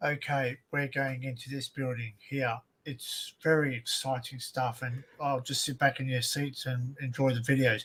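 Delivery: flat, unvaried, droning monotone. Imitating a dull video presenter to show what boring speech sounds like, monotone. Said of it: "It's monotone".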